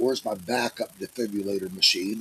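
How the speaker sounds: normal talking voice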